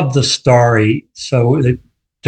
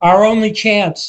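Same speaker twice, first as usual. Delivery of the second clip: loud, high-pitched shouting. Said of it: "Paul shouts".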